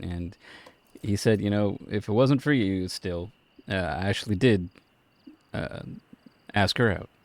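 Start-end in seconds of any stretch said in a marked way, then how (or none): none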